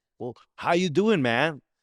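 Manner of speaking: put-on American accent. Retelling an audition where they asked for an American accent: imitating own American accent attempt. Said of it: "so do you listen to American accent?".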